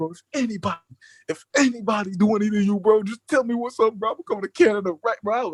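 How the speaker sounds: put-on tearful, emotional, drunken crying voice. Retelling a voice message sent while drunk: imitating own tearful drunk plea. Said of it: "so I'm crying, bro".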